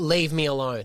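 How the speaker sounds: mock proper, angry, dismissive, cross delivery. Retelling how the partner reacts when checked on while sick: imitating partner's angry dismissal. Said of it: "proper angry at me when I come".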